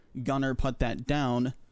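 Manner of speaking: ordinary delivery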